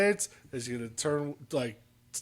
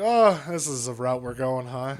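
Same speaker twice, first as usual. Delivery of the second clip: ordinary talk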